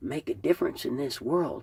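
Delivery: ordinary delivery, nothing marked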